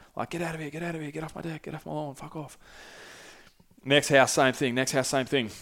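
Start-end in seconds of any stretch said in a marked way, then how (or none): 0.3-2.6 acted very quiet, hushed, mildly angry, dismissive tone. Retelling how people yelled at him as he knocked on doors: imitating people yelling. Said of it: "People are yelling at him".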